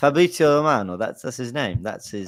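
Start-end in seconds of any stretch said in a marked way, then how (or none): 0.0-1.0 Italian-accented pronunciation. Asked to do an accent, the speaker says a name in an Italian accent. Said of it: "I'll say it in Italian accent".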